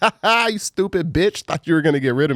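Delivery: mock taunting laughter while talking. Retelling a video of a man taunting his child's mother: imitating mocking laughter. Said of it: "laughing in her face".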